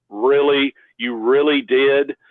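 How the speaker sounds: thick, really sarcastic disbelief. Retelling how a man replied to the speaker, retelling a sarcastic reply. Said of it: "Just real sarcastically".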